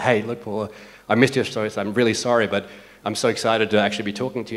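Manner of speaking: plain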